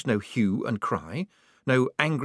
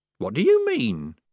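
ordinary delivery

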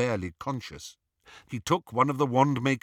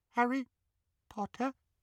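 tiniest trembling squeak, very high and soft; 12 semitones higher, 6 dB quieter than usual. Back in his old masters' home, the elf greets Harry Potter: Dobby's tiny quivering squeak. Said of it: "he squeaked in the tiniest quiver of a voice".

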